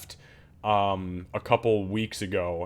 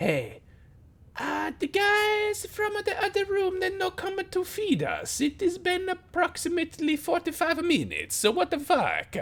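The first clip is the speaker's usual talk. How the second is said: shrill, very high, swooping little creature voice. Narrating to players, voicing a creature they overhear: kobold voice. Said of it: "you hear clear as day in Draconic, Kobold".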